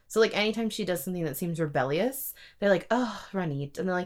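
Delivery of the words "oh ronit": mock falsely polite, passive-aggressive, dismissive tone. Retelling how characters dismiss ronit: imitating a passive-aggressive tone. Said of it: "in a passive-aggressive way, in a dismissive way".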